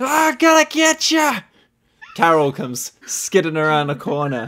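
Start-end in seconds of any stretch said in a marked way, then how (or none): 0.0-1.4 very high, drawn-out hollering shout. Narrating a tabletop scene, voicing someone coming down the hall, shouting. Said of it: "you hear somebody shouting".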